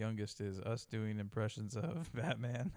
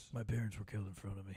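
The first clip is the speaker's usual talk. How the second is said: much quieter hero voice, hard to hear; 2 semitones lower than usual. Quoting a film hero's line while mocking the movie, quiet hard-to-hear voice. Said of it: "Can you speak up a little?".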